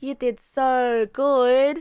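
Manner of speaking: slow, play-acted tone that sounds sarcastic. Retelling how she praised them, imitating her sarcastic-sounding praise. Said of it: "I sound sarcastic, but that's how she sounded to me".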